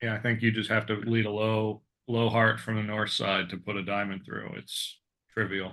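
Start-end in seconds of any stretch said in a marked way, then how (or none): 4.6-5.7 dry sarcasm, slow, soft and deadpan. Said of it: "Yeah, that was sarcasm".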